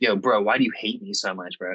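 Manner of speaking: acted, hostile, confrontational tone. Recapping a show, retelling one contestant confronting another, retelling a hostile confrontation. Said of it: "comes in all hostile".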